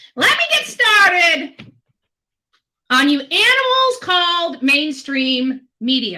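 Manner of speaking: loud, furious, fired-up angry tirade. A speaker who says she is pissed and wants to be heard sounds angry. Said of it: "She's mad".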